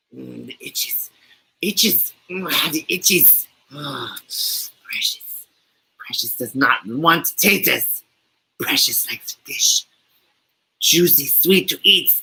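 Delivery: breathy, whispered, creepy cave creature voice. After offering it to the group, the speaker does a Gollum impression. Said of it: "You guys want me to do my Gollum impression?".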